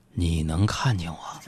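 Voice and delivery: very low, hushed, ghostly spooky voice. Retelling trying to scare a girl in an elevator: imitating a lowered, spooky voice. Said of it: "就压低声音说".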